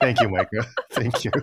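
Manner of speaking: laughing through the words.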